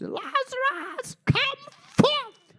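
very high, loud, ringing commanding cry. Speaking about casting out demons, the speaker quotes Jesus calling Lazarus, in a loud cry. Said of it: "It says with a loud voice".

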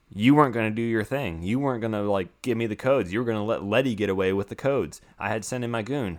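usual speaking voice

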